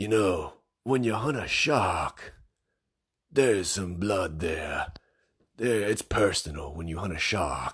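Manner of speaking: put-on grizzled hunter character voice. Imitating how a shark hunter would sound, in a grizzled shark hunter voice. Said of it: "Let me see if I can do his voice here".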